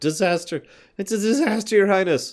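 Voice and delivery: out of breath. Reading a messenger who ran all the way to the throne room: out of breath. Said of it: "Lindsay's cheeks are flushed and she's out of breath".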